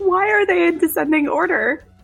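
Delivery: put-on yell. Retelling a reaction to a photo of stacked bookshelves: imitating own past yelling. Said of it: "I don't know why you're yelling".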